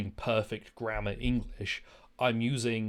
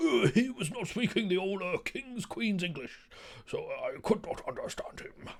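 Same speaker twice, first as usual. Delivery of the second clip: put-on squeaky, very high-pitched old man voice; 9 semitones higher than usual. Speaker mocks an old man's complaint about a scottish speaker, imitating an old man. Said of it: "this old fucking dude being like".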